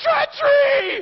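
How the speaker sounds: shrill, very high, very loud accusing shriek. Retelling a bible story, acting out one man's scream at another. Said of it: "he screams at Ahaziah".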